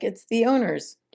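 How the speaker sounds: calm, unruffled, even, matter-of-fact tone. Retelling a young man's reply to a woman demanding whose car it is, imitating calm. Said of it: "He was very calm and he's like".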